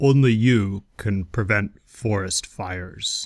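put-on bear voice. Asked by another speaker to say it like Smokey would, Smokey Bear voice. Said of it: "Say it like a bear".

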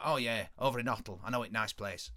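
put-on northern English accent. Retelling a scene where Marber, playing Spiros, drops the Greek act, northern accent. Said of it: "he just says that in a northern accent".

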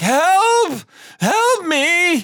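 desperate, very high, loud pleading scream. Narrating a man being attacked by a manticore, voice him screaming for help. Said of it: "he's screaming like".

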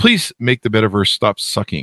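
ordinary delivery

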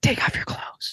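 hushed whisper very close to the microphone. Retelling a line heard in a movie scene: imitating Aladdin's whisper. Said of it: "the voice actor whispers that into the microphone".

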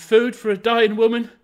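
wild, frantic cry, very loud and high. Having rushed from the room to the workhouse gate, the narrator is crying out.

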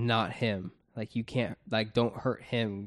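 ordinary delivery

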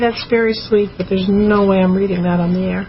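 usual speaking voice

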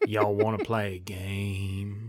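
low voice, game dragged out. Voicing a comic-book villain as the others guess his voice: Sling Blade voice. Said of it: "he's like Sling Blade?".

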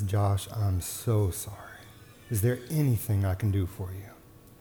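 put-on sweetest, softest tone. Husband retelling what his wife asked him from bed, in the sweetest, softest tone. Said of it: "in the sweetest, softest tone".

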